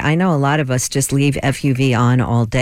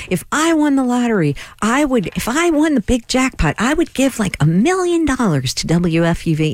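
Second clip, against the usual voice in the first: squeaky everyday-person voice, very high, put on; 10 semitones higher than usual. A WFUV host acts out what an imaginary person would say: imaginary person's voice. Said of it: "You'd say it in that voice?".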